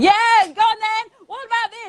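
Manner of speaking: very high, keen, eager voice. Contrasting the dull inner voice, the speaker acts out the ego, mock-passionate. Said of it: "the ego will sound passionate".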